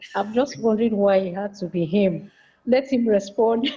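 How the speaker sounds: giggly words spoken between laughs. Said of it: "I'm laughing".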